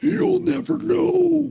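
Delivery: very high inhaled speech. Retelling how he voiced a captured aquatic creature, imitating talking while breathing in. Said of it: "he was like breathing in while talking".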